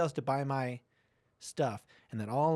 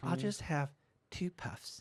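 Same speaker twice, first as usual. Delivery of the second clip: put-on British accent, quieter; 5 dB quieter than usual. Imitating a smoker promising only a little: put-on British accent. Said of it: "Are you talking in a British accent?".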